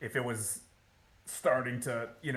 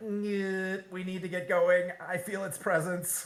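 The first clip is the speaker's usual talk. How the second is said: high robot voice, drawn-out "nyeh"; 8 semitones higher, 3 dB louder than usual. Retelling how Lantoris spoke in the game: Lantoris robot voice. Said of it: "that's your robot voice".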